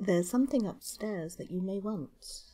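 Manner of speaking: said quietly, soft voice. Voicing a character slipping up beside a companion: said quietly. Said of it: "slip up quietly beside you".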